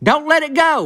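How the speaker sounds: mock hollered call, very high-pitched. Retelling how Dewey Morton reacted when Cricket reached for the shoebox: imitating someone hollering. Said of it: "old Dewey Morton holler at".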